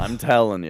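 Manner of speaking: ordinary talk, nothing marked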